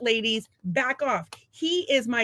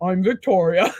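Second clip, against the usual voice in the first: sweet, small, cute voice, deep-toned and raised; 5 semitones lower, 7 dB louder than usual. Speaker retells how Tori introduced herself as a little girl; Tori's cute little deep voice. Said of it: "She had the cutest little deep voice".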